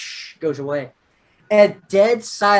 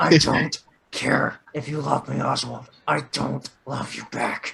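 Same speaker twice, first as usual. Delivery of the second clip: low, quiet, slow mock villain talk through gritted teeth. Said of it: "Talk through our teeth".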